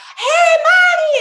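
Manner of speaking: shrieking, very high, very loud screaming. Retelling her cousin greeting her outside the exit, imitating Celia Rosa screaming. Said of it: "she's screaming and yelling at me".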